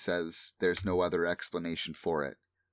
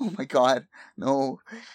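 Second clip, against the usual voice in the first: acted sobbing, very loud, very slow, drawn-out wail; 7 semitones higher, 8 dB louder than usual. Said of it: "he starts to cry".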